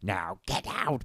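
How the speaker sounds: creature voice in a whisper. Retelling how Gollum kicked them out of a building, in the Gollum voice. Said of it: "but like in the Gollum voice".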